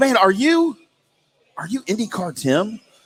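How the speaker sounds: whispering. Retelling how a fan asked if he was IndyCar Tim: imitating someone whispering. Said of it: "You don't have to whisper".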